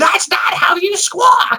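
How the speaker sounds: very high, shrill, slow shouting yell. Imagining an off-camera director correcting the kid: Gilbert Gottfried voice. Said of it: "Gilbert Gottfried off camera going".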